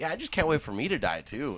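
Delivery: very happy, upbeat sing-song, swooping and high. Retelling grandma's line at a birthday dinner: imitating her sounding super happy. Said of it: "all super happy".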